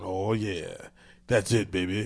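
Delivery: deep, slow, drawn-out video game voiceover voice. Describing a mobile game to the others, doing the Candy Crush deep voice. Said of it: "a deeper voice going".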